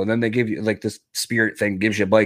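ordinary talk, nothing marked

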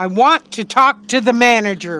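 mad, angry tone. In the podcast outro, the host's grandma says the line in an angry voice. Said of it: "ask grandma in like an angry voice".

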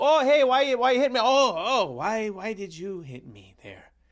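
high, loud stammering. Imitating him asking why he was hit: Justin Trudeau voice. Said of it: "he's like".

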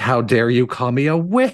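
put-on screaming voice. Recounting a boss fight, imitating the Crimson Witch of Flame screaming at you. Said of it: "she's screaming at you".

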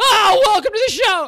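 shrieking, as high and loud as possible. Opening a mid-roll in character, as Screaming Man. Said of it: "Today's character is going to be Screaming Man".

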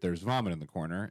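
ordinary talk

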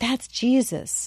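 hushed whisper. Retelling a mother answering her daughter's question, whispered reply. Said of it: "And Katie whispered back".

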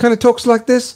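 put-on high-pitched New Zealand accent. Describing Tuivasa from New Zealand and showing how he talks: Tuivasa Kiwi accent. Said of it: "he's got the Kiwi accent".

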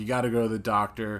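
ordinary talk, nothing marked

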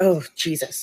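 put-on muttering under the breath. Retelling a plane seatmate's reaction: imitating muttering under breath. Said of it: "under his breath".

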